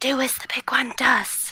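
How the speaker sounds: loud theatrical whisper. A player's character whispers a command to a small creature, whispering. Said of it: "I'm going to whisper".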